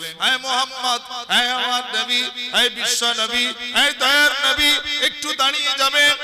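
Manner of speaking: loud, high-pitched pleading.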